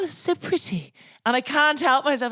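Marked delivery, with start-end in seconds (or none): 0.0-0.9 put-on soft, breathy, very English posh accent. Mimicking the posh english woman the speaker works for: posh english accent impression. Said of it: "she's so English posh".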